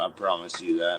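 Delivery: menacing, threatening, leaned on. Imitating John threatening someone over private messages: imitating John threatening. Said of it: "Now he's doing a John".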